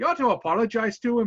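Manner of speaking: attempted Scottish accent. Speaker retells what a man said after regaining his composure: Scottish accent. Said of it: "I was going to try to get a Scottish accent going".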